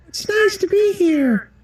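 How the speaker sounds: very high, very slow disguised voice.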